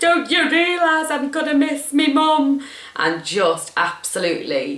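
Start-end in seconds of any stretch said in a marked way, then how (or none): 0.0-2.6 put-on very high, drawn-out, tearful weeping wail. Retelling bursting into tears with a partner: imitating herself crying. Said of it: "bursting into tears and going".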